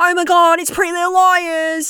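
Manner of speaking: terrible fake Australian accent, very high-pitched. Quoting two excited girls, in a bad Australian accent. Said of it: "That's a terrible Australian accent".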